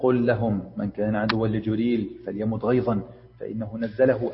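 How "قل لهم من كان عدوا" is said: ordinary delivery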